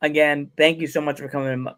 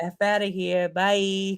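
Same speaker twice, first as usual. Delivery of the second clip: very slow put-on Brooklyn accent; 5 semitones higher than usual. Imitating dad sending him off into the basement: imitating dad in Brooklyn accent. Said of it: "He'll Brooklyn me".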